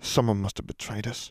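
low, soft, mumbled mutter. While the group waits to be called upstairs, one of them mutters. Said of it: "Ron muttered".

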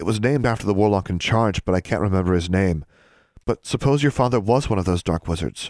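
plain

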